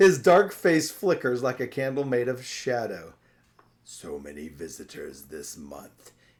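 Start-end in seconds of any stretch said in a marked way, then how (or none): 3.8-6.1 very low, hushed, deep, hollow rumble. Reading a story aloud, narrator voices the creature's line: deep, hollow voice. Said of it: "he says in a deep, hollow voice".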